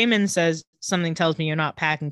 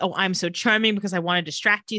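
plain

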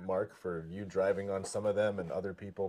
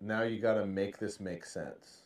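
ordinary talk, nothing marked

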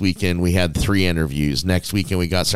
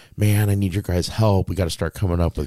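put-on worried voice. Retelling what Aaron said when the show had no guests, imitating Aaron's worried voice. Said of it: "gets worried like".

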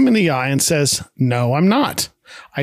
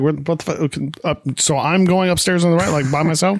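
ordinary delivery

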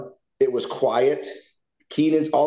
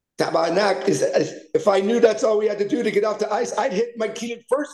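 put-on higher-pitched French accent with stretched-out I sounds; 8 semitones higher than usual. Telling a story of a teammate's remark leaving the ice, imitating Denis Savard's French accent. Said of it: "Dennis Savard in his French accent goes".

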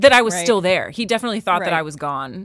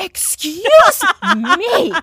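put-on voice, much higher, louder; 13 semitones higher, 7 dB louder than usual. Speaker retelling turning the video on to confront someone, full-on mom mode. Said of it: "full on mom mode".

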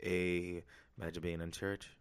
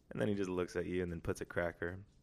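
usual speaking voice

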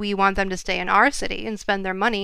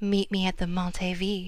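seductive, husky, sultry sexy voice; 5 dB quieter than usual. Scripting a line to say to a tall fella, husky sexy voice. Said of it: "in a husky sex voice".

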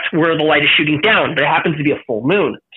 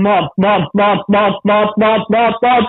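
put-on frightened stammering, higher and slower; 4 semitones higher than usual. Retelling facing a frightening thing and calling for mom; retelling frightened stammering. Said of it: "So I start stammering".

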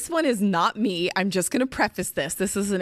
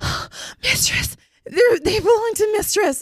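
mimicked gasp, much higher; 13 semitones higher, 4 dB louder than usual. Retelling a role-play, acting out how he gasps his answer. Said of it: "And he like gasps it".

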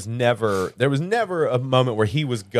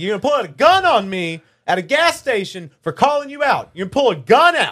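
play-acted loud yelling, pitched way up; 9 semitones higher, 5 dB louder than usual. Speaker retells confronting a man at a gas station, retelling a yell.

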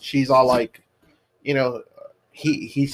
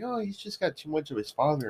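put-on, slow, sweet, kindly delivery; 3 semitones higher, 9 dB quieter than usual. Retelling how a character says a line in a movie: imitating saying it real nice. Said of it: "real nice".

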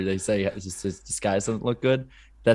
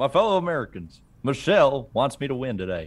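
put-on Southern-sounding politician voice, higher; 5 semitones higher than usual. Picking a race winner as Obama: Southern-sounding Obama impression. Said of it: "Why do I sound Southern when I talk like that?".

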